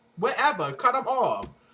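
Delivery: normal talking voice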